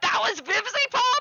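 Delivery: mock, very high, loud blurted-out exclamation. Retelling what the speaker said about a woman who walked away, retelling a loud exclamation. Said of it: "I said it really loudly".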